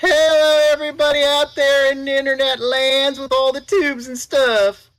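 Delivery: very high, loud, goofy put-on silly voice. A returning guest greets everybody on the internet in a silly character voice. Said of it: "I won't be doing the silly voice the entire time".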